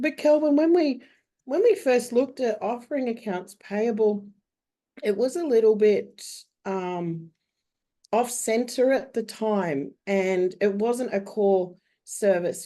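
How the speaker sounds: rough, hoarse voice that cracks. Answering a question on outsourcing while having the flu: crackly voice from the flu. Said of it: "crackly voice this morning".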